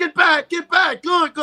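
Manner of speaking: high-pitched, loud yelling.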